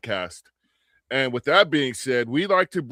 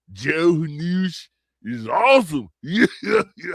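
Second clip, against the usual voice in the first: put-on Florida man voice, "news" drawn out; 3 semitones higher than usual. Speaker redoing his last line, this time in his Florida man voice. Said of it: "I didn't do it into my Florida man voice".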